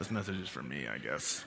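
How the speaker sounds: low, quiet, begrudging mumble.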